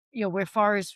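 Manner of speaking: ordinary talk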